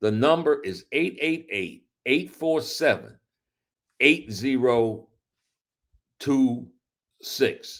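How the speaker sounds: slow, unhurried, deliberate delivery. Reading out the number and website for the audience to call, said slowly. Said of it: "I'm going to say that slowly".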